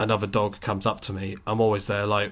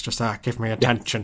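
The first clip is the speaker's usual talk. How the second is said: put-on dog voice. Imagining all dogs talking in Alan Partridge voice as dog. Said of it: "imagining all dogs now in that voice".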